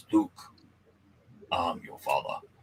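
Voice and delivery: deep, low, rusty, breathy whisper. Showing someone the voice that the line needs, do a deep, rusty Darth Vader voice. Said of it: "need to have a deep, rusty voice".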